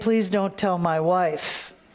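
mock tearful pleading, male crying voice. Quoting what arrested men say next: imitating a man crying. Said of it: "they start crying and say".

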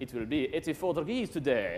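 put-on natural voice, French-accented. Quoting a home device reading the weather, in a French-accented voice. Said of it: "in a natural voice with a French accent".

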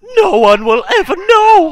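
mock crying shout.

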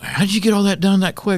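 high, amazed tone.

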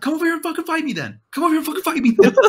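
loud, high-pitched screaming. Storyteller acting out Jesse yelling back across the street, retelling Jesse's scream. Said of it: "we're screaming back at him across the street".

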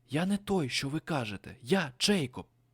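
hushed whisper. The narrator answers his captors' accusation: whispering. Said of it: "прошепотів я".

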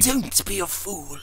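urgent, sharp, high-pitched hissed rebuke. Narrator reads a man offering his pistol to another who struggles: hissed. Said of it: "hissed Divine".

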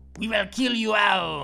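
over-the-top, obnoxious, fake put-on French accent. Voicing enemies in a game, delivering a threat in an obnoxious french accent. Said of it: "With our obnoxious French accents".

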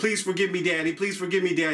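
put-on childlike voice, pleading and begging. Imitating little kids begging a parent: imitating a begging child. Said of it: "begging them".

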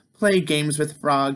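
ordinary delivery

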